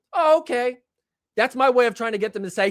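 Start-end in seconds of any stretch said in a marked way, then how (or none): 0.2-0.8 put-on passive-aggressive tone, higher. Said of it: "get all passive aggressive and be like".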